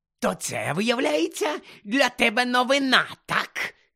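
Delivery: hoarse, rasping, furious voice, rising in pitch. Reading the story aloud, the narrator voices a man questioning the boy, hoarse with anger. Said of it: "захриплим від злості голосом".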